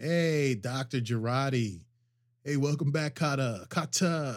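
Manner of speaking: put-on slow, drawn-out Brooklyn high school kid accent. Showing how students in brooklyn would greet a teacher: brooklyn high school accent. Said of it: "how we would have said, like, our teacher's name in high school in Brooklyn".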